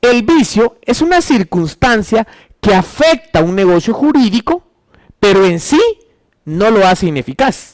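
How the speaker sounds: slow, deliberate, spaced-out dictation pace.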